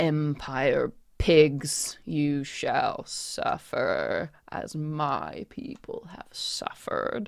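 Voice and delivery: slow, drawn-out, floating mummy-creature voice. Voicing a floating creature threatening the whole theater: voice of the floating mummified creature. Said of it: "the whole theater hears this voice saying".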